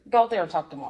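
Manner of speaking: ordinary talk, nothing marked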